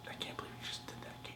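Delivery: mock outrage, unvoiced, very soft furious hissed whisper.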